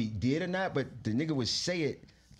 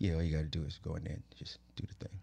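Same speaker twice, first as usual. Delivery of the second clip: low, soft, calm, matter-of-fact reassuring tone.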